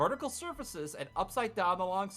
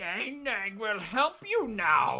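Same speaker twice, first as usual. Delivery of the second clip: croaking creature voice, slower pace; 2 semitones higher than usual. A game master voices a frog-like head speaking into a player's mind, croaking Nang Nang voice. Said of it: "A croaking voice sounds out in your mind".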